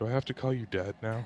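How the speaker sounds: muttered aside. A character speaks so that only Bryn can hear him, Rashi muttering under breath. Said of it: "he says under his breath".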